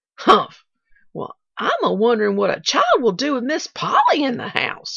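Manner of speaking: loud, swooping, snappish delivery, words flung out. Replying to an old man's remark: snapped. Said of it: "snapped Nancy".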